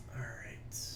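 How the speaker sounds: soft whisper on "all right".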